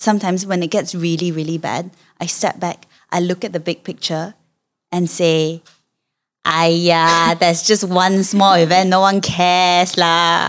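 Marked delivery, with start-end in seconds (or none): 6.4-10.5 dismissive, brushing-off tone. Showing how to brush off a bad thought: dismissive self-talk voice. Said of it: "You need that voice".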